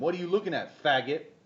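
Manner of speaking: loud, hostile, aggressive yell. Retelling the start of a fight, imitating someone screaming. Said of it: "he starts screaming at him".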